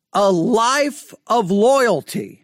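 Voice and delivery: slow, stressed loyalty, read like a formal title. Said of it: "the reason I'm stressing the word loyalty".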